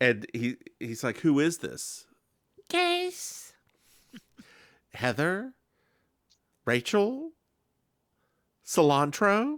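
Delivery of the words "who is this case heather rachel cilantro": silly, high, sing-song female voice, drawn-out and swooping. Retelling a scene where Anthony makes a phone call, Anthony's silly female voice. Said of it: "his little silly female voice".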